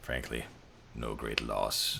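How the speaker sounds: low, quiet voice. Voicing a diseased character glancing at Constance, lowered voice. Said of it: "kinda lowers his voice".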